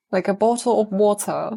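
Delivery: posh English accent. Speaker showing how friends in London talk, posh English accent. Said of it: "they speak really posh. I can't do that".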